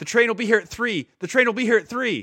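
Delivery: terrified shrill shout, very high and very loud. Retelling a war story where a captured conductor yells: imitating a man yelling. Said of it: "the guy is yelling".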